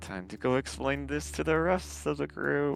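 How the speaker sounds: faint, hushed, very soft mumble under the breath. After nodding along, the player's character mumbles under breath. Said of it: "ever so slightly mumble under my breath".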